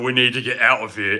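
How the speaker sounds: put-on British English accent, dub-style voice. Speaker describing an English dub, imitating the British voices. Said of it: "hearing like British guys saying".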